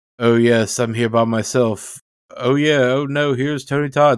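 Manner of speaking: solo commentary-track chatter, musing. Retelling a film commentary, imitating Bernard Rose. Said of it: "Rose being like".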